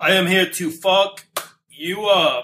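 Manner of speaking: slow, drawn-out, really bad cyborg voice. Adding another line after calling the last one bad: Arnold Schwarzenegger impression. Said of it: "That's a really bad Arnold impression".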